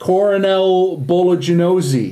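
put-on loud, high, heavy English accent laid on big. Recalling Chuck pronouncing the names, imitating Chuck's big English accent. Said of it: "Fucking big English accent".

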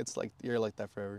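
ordinary delivery

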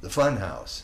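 ordinary talk, nothing marked

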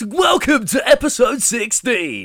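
loud, swooping radio announcer voice. Podcast host showing how he opens each episode, radio voice. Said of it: "I always start with my radio voice".

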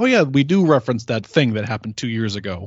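ordinary delivery

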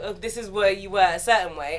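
usual speaking voice

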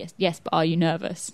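ordinary talk, nothing marked

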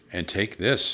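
ordinary delivery

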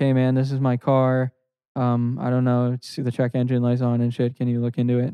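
ordinary talk, nothing marked

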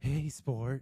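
wobbly, shaky, strung-out tone. Mocking how a man talked to their kids, in a junkie-like shaky voice. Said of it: "sounded like a crackhead or like a junkie being like".

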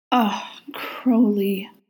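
suddenly very tired, exhausted, weary. In a dark car, answering a man who has no idea what to say: very tired. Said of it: "sounding very tired all of a sudden".

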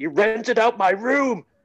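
acted, very high, petulant, spoilt-teen bratty yell. Describing the scene where he shouts that thing, Bruce Banner shouting like spoilt teen. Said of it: "shouts that thing like a spoilt teenager".

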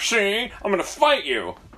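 put-on old-timey, high, swooping, sing-song brawler voice. Describing George Washington with his fists up, in an old-timey George Washington voice. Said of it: "He's all old timey with his fists up".

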